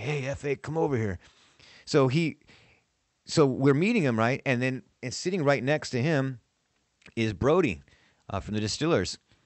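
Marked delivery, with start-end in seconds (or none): 0.0-1.2 put-on raspy voice. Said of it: "he has that raspy voice".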